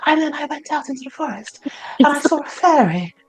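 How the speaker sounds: put-on breathy voice. Mocking a woman's voice that jarred the speakers, imitating a breathy voice. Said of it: "it was breathy. She's like".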